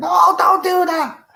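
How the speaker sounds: play-acted very high, drawn-out shriek. Retelling shouting at the TV while watching a show: imitating own shouting at screen. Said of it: "I just love shouting at the screen".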